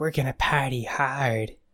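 slow, sultry put-on voice. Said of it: "my Jennifer Tilly impression".

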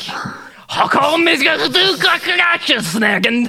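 slow, high-pitched, mangled German pronunciation.

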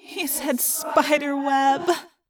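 moaned. A character reacts to what someone just said, moaning. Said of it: "Rachel moaned".

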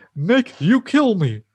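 very high, pushed-up sitcom-style alien voice. Speaker repeating a famous Alf catchphrase, in an Alf voice. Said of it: "That's an Alf voice".

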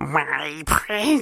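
half-hearted, fumbled, falling-short attempt at creature voice. Taking a turn at impressions, Gollum impression, high voice. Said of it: "I can't get that high voice down".

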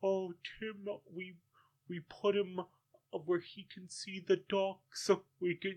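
small, sad, high voice. Imitating Kermit speaking sadly about Tim: sad Kermit the Frog voice. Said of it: "I can't do, Megan, you have to say it".

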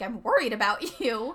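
voice cracking. Retelling what the dad said to his daughter, voice cracking while quoting dad. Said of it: "Did you hear my voice crack".

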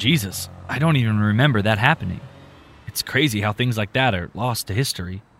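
plain

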